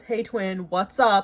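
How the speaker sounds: completely monotone, dead flat, zero inflection. Retelling how a coworker greeted the speaker at work, imitating a completely monotone greeting. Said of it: "Like completely monotone".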